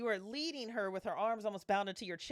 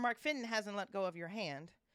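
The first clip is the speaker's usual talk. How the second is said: ordinary talk, nothing marked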